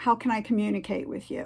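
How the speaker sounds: normal talking voice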